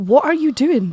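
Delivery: bitchy tone.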